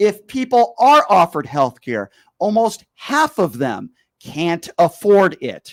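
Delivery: very slow, deliberate, distinct, carefully spaced-out words. Talking down to someone they called a fool: speaking slowly and distinctly. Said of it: "I'm speaking slowly".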